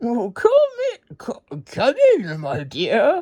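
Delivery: little squeaky voice with swooping pitch. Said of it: "squeaked the wolf".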